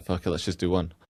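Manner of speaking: ordinary talk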